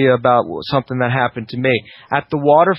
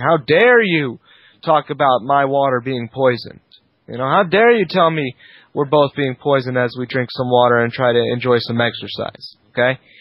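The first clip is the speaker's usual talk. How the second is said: ordinary delivery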